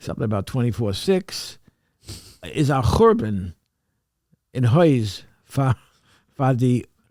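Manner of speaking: halting, hesitant reading in Yiddish. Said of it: "if you could sort of read that".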